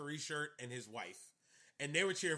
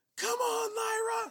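very high, shrill, loud cheering scream; 7 dB louder than usual. Retelling a fan in front cheering for a wrestler: imitating a fan screaming. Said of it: "This man was screaming at the top of his lungs".

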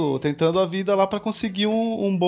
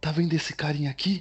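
put-on hushed wildlife presenter voice, lower and quieter; 4 semitones lower, 7 dB quieter than usual. Imitating a presenter showing a dangerous animal: lowered voice imitating Richard Rasmussen. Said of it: "ele abaixa a voz".

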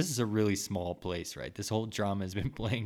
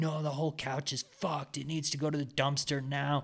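play-acted full-on high-pitched screaming insistence; 6 semitones higher than usual. Retelling an argument over a couch, quoting a man, imitating someone screaming. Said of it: "And he's screaming, like".

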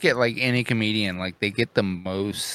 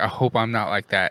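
ordinary talk

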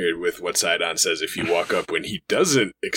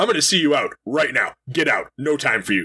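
mock rude, dismissive tone; 7 semitones higher than usual. A player retells a game character turning someone away, mock-rude dismissal. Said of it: "he is very rude".

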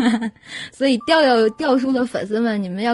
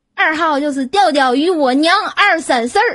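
Tianjin dialect spoken at a slightly raised pitch; 5 semitones higher, 4 dB louder than usual. Announcing the secret for number two, switching into Tianjin dialect. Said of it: "请让我用天津话说啊".

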